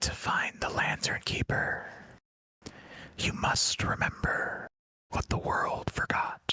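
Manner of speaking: soft, breathy, airy whisper. Voicing a voice on the wind speaking to the players: whispering voice on the wind. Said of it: "a voice carried on the wind whispers to you".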